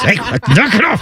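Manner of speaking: mock whisper-yelling. Retelling how everyone at home hushes each other: imitating whisper yelling. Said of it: "all the whisper yelling you want".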